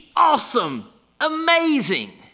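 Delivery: high-pitched, loud, excited, gushing cheer. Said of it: "the children go".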